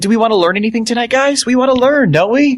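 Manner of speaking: very high, patronizing kindergarten teacher voice. Asking the group if they want to learn tonight: talking like a kindergarten teacher. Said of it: "talk to us like a kindergarten teacher".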